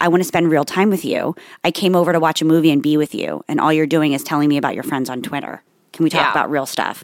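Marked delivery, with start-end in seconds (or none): none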